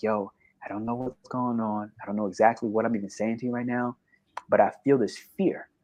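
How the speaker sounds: imitated whisper. Retelling words once said to a friend in a subway: retelling a whisper. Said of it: "I remember whispering to him".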